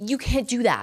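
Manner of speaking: acted-out light yell, played down. Retelling a gym confrontation, the speaker quotes a woman on a treadmill, imitating her yelling. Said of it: "she's like y- yelling".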